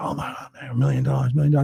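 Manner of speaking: mock-excited crowd getting crazy. Retelling his stage talks to thousands, imitating an excited crowd. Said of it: "People fucking get crazy".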